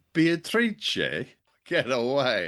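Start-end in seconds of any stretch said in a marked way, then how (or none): 0.1-1.2 "beatrice" in Italian pronunciation, higher pitch. Repeating the name after being told to practice: trying italian pronunciation of beatrice. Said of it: "You have to practice this, practice this with me".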